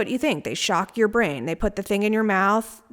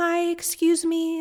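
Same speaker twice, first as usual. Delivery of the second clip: put-on timid, meek, gentle little voice, pitched up; 8 semitones higher than usual. Recalling walking up to the nurses' desk for help, retelling in a meek, tender voice. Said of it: "in my most sort of meek, tender voice".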